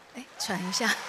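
ordinary delivery

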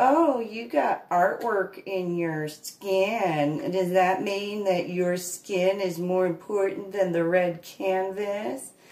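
slow, dripping sarcasm with "skin" stretched long. Recounting what two friends said about his tattoo, mimicking their sarcasm. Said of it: "they were being sarcastic".

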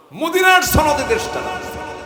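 mock shout, high and loud.

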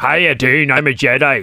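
put-on very low-pitched Northern Irish accent. Mocking how he sounded in Star Wars, do Liam Neeson's Northern Ireland accent. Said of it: "he had a Northern Ireland accent".

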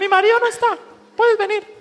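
very high, shrill, fast parrot chatter. Telling a joke about a married couple's parrot, in a parrot voice. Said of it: "en voz de loro".

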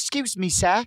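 put-on British accent. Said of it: "in her British accent".

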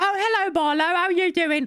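put-on British woman's accent, pitched very high. Describing a tech demo for the game Project Milo: imitating a British woman. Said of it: "like, British woman".

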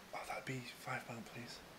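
very hushed, breathy whispering. Retelling whispering to shop customers: imitating own whisper. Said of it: "I'd whisper to them".

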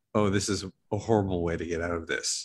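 ordinary talk

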